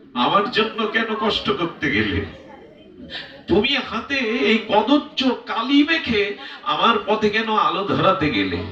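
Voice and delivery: pleading, lamenting, mournful voice.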